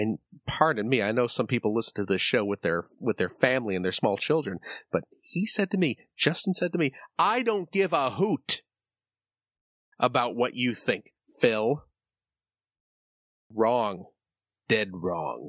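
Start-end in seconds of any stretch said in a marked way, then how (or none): 7.2-11.8 menacing delivery, said as a real threat. Retelling what a friend said: imitating a threatening tone. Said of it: "he said it in, like, a really threatening way".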